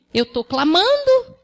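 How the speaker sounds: slow, high-pitched defensive voice.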